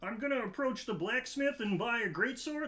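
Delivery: high, froggy puppet voice. Recounting how his barbarian character talked all campaign, Kramit the Barbarian voice. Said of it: "his name was Kramit the Barbarian, like Kermit".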